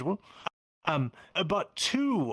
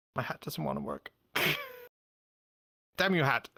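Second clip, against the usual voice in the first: winded, out of breath. A character trying to introduce himself, out of breath. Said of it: "I'm out of breath".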